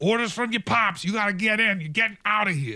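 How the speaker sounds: loud, high-pitched yelling. Voicing a bodyguard pulling someone into a vehicle: bodyguard yelling. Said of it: "one of them is kind of yelling at her".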